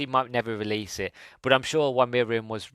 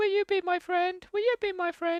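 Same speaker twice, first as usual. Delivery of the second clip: put-on cute creature voice, higher. Retelling how the Meep asks for help: cute Meep voice. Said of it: "cute voice".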